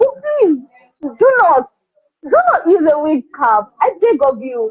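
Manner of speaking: words breaking up with laughs throughout. Reacting to a viewer comment about wig caps, laughing while talking. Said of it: "I'm sorry, I am laughing".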